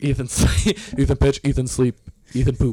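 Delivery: put-on broken caveman-style speech. Imitating a teammate as a caveman: imitating a caveman. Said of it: "You make him sound like a caveman".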